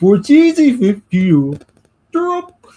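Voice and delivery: belted high and slow, badly. Talking about food, doing a horrible Swedish Chef impression. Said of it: "That was a horrible Swedish chef impression".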